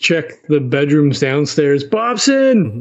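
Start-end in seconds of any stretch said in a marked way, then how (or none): 1.8-2.8 high, loud calling-out yell in an acted voice. Voicing a character searching bedrooms, calling someone: in-character yelling. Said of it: "he would start yelling".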